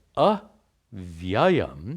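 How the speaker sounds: avyayam with first a hammered hard. Describing Brahman and stressing the negating syllable: heavy stress on first a of avyayam. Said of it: "I'm again stressing these us to make the point. You don't pronounce the words like this".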